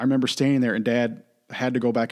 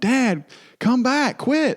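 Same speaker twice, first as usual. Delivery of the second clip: mock frantic calling out, very high and very slow; 13 semitones higher, 5 dB louder than usual. Recalling yelling for dad to come back from the fire, retelling a yell. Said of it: "I kept yelling".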